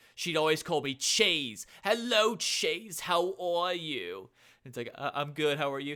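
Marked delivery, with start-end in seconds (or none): 1.9-4.3 put-on Long Island accent, drawn out, swooping high. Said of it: "I would kind of do like an impression of her".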